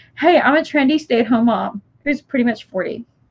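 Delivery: ordinary delivery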